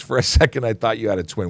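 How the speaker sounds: ordinary talk, nothing marked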